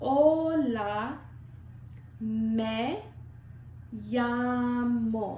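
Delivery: said slowly. Showing the pronunciation of a spanish greeting, said slowly. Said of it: "I'll do it a little bit slower".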